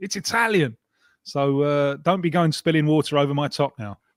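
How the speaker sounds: ordinary talk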